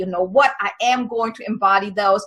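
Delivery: plain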